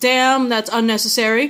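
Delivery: normal talking voice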